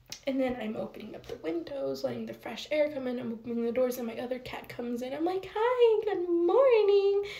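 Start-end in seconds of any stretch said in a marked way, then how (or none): 5.6-7.2 super happy teacher voice, very high and loud. Retelling greeting a cat in the morning: imitating own cheerful kindergarten-teacher voice. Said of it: "I felt like a kindergarten teacher".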